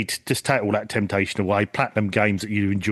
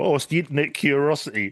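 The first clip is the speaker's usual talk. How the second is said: mocking mimicry, higher pitch; 6 semitones higher than usual. Imitating what the other speaker said earlier: mocking imitation of other speaker. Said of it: "You had me believing you when you first were talking".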